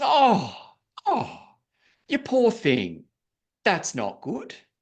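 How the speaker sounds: very broad Australian drawl, slow, sing-song and swooping. Retelling how a woman on a free phone call replied: broad Australian accent. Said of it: "this very broad Australian accent".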